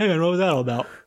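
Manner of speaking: mock talking with mouth full. Describing walking up to someone mid-bite of cake: acting out talking with mouth full. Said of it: "Your mouth's full".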